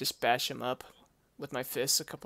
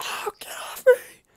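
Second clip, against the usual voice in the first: put-on full-volume, frightened scream; 9 dB louder than usual. Speaker recounts a big spider getting on them, retelling a scared scream. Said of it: "I'm screaming".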